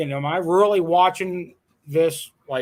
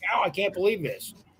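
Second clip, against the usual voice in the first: put-on, fast, worked-up burst of excited amazement; 3 semitones higher, 5 dB quieter than usual. Retelling the moment of spotting a Bigfoot: retelling own excited words. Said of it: "I'm getting all excited about it".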